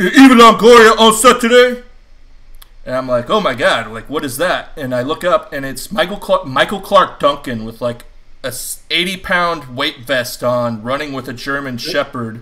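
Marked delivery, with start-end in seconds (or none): 0.0-1.8 booming voice, much louder and higher. Telling a story from a film set, quoting a runner calling out, booming voice. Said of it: "this really loud booming voice go".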